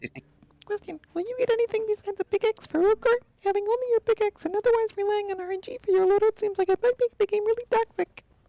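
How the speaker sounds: tiny, squeaky, very high mouse voice. Host reading a viewer's question from YouTube in a little mouse voice. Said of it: "I'm gonna read it like a little mouse".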